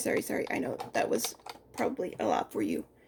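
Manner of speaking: low, soft, hushed whisper.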